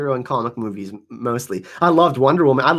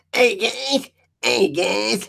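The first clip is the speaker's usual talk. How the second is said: put-on bratty cartoon boy voice, much higher; 8 semitones higher than usual. Speaker shows off his impressions for someone, doing his Cartman voice. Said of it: "there's my Cartman voice for you".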